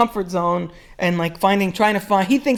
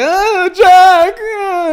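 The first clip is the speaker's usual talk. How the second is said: put-on shrill, very loud, high, frustrated, pissed-off cry; 11 semitones higher, 8 dB louder than usual. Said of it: "pissed off".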